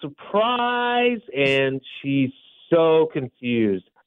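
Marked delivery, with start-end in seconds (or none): 0.0-1.2 high, mild mock yell of surprise. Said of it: "We all yell".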